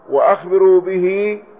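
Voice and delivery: ordinary talk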